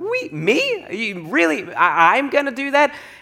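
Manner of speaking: very slow, drawn-out, swooping tune rising upward. Retelling own questioning when God calls: voice going up. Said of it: "my voice goes up when I question God".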